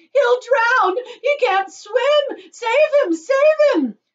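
panicked, shrill, very high, loud, drawn-out cry. Mrs. Gloop, as her son sinks in the river, cries out in panic.

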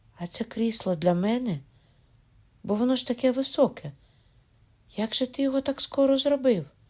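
amazed and delighted. A girl answers her grandfather's question, surprised and delighted. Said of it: "Відповіла так здивовано і водночас захоплено".

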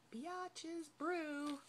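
hushed, soft, slightly high half-whisper under the breath. Presenting gifted candles, the speaker says a scent name she can't say aloud near him, half-whispered. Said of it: "Sorry, I had to whisper it".

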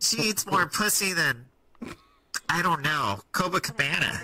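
pinched-nose nasal voice, put-on. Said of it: "I wanna hear your Tony Hinchcliffe voice".

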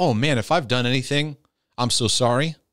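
ordinary talk

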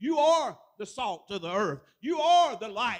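loud, slow, booming proclaiming voice.

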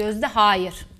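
clear, decisive, resolute, firm voice. Showing how to tell an animal no: clear, firm, decisive tone. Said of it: "Net, kararlı bir ses tonuyla".

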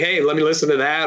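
ordinary talk, nothing marked

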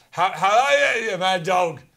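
put-on Scottish accent. Trying out accents for the other speaker, now in a scottish accent. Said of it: "let's go Scottish".

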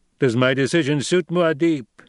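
faintly sarcastic edge. A man puts a question to Muad'Dib, with a faint touch of sarcasm. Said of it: "Only the faintest touch of sarcasm tinged his voice".

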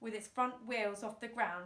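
ordinary delivery

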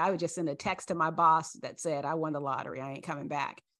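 ordinary delivery

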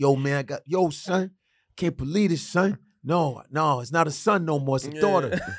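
put-on upset voice. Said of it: "He's probably like this".

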